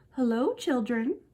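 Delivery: sugary, kindly, sweet storybook tone. Reading a children's story, the teacher greets the children again, sweet voice. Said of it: "someone said in a sweet voice".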